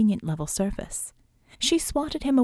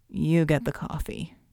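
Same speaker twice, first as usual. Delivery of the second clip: soft murmur, slower; 5 semitones lower than usual. Narrator reads a man's words spoken from bed, murmured into the pillow. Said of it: "he murmured into the pillow".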